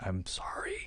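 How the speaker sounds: soft, breathless whisper.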